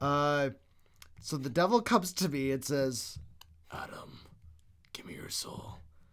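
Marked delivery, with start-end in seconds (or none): 3.7-5.8 very quiet, breathy whisper.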